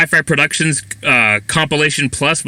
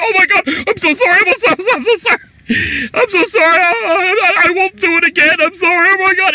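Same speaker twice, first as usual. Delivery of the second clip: mock very high, stammering, panicked, terrified babbling. Retelling how a bully apologized after being confronted: imitating someone terrified. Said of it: "he was so terrified".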